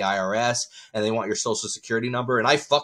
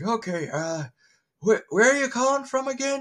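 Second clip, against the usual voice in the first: high-pitched put-on elderly man voice; 13 semitones higher than usual. Stalling a suspected phone scammer, old man voice. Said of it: "I usually do an old man voice".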